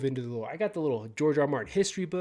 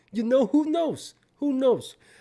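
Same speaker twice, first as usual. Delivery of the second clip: very high, loud, put-on Italian accent; 10 semitones higher, 5 dB louder than usual. Host commenting on HBO news, slipping into an Italian accent. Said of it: "I got you know my uh my Italian my Italian accent going".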